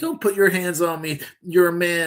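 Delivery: loud shrieking scream. Retelling footage of a woman pulled over by a cop, imitating someone screaming. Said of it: "she starts screaming".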